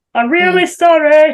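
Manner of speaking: put-on northeastern English accent. Retelling a man's apology after he knocked it over, northeastern accent. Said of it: "Hearing this northeastern accent coming out".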